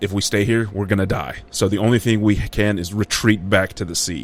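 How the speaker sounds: ordinary talk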